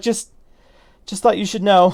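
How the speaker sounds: high, breathless and winded, still catching breath. Voicing a winded character pausing to breathe after running: out of breath. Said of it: "he stops to breathe for a second".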